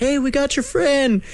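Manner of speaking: high, friendly yell.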